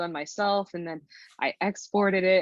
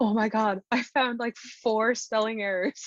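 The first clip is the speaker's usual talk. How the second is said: completely panicking exclamation; 4 semitones higher than usual. Retelling texting a friend the day before release: imitating own panicked words. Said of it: "panicking and being like".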